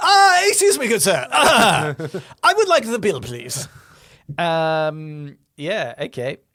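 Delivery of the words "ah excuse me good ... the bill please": very loud, swooping posh British accent. Acting out asking a waiter for the bill, in a posh British accent. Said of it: "it's posh British accent".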